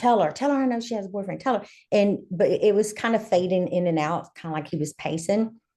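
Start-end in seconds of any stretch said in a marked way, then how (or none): 0.0-1.7 mild, repeated, insistent, pushy background holler. Retelling a phone call with the ex in the background: imitating someone hollering. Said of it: "I could hear him hollering in the background".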